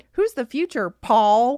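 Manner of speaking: very loud, shrill, booming, high mocking voice. Asked to do the line one more time, repeating it, mocking high-pitched imitation. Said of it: "That's pretty good".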